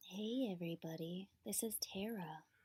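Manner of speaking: slow, smooth, creamy, savoring delivery. Asked for a little slow, tasty voice, greeting everybody and introducing themself. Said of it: "give him a little slow, tasty voice".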